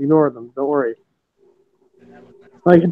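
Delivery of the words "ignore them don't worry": low, muttered under the breath. Retelling what one wrestler told another mid-match: imitating speaking under her breath. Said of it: "under her breath".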